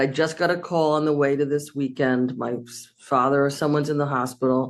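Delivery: ordinary delivery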